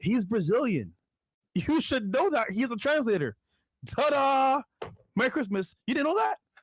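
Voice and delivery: mock cheerful, sarcastic, pitched way up.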